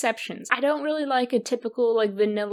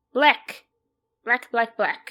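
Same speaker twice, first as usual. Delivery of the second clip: puppet-style vampire character voice; 3 dB louder than usual. Going through items on a plate, repeating one word: vampire voice like the Count. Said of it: "I sound kind of like a, a vampire, like I'm the Count".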